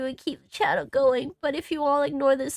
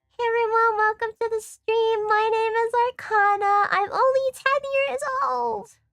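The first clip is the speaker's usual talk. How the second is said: put-on, cartoonish, pitched-up anime character voice; 8 semitones higher, 4 dB louder than usual. Pretending to open a stream: put-on anime character voice. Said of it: "I sound like I'm trying to be a fucking anime character".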